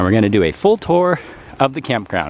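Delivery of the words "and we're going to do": ordinary delivery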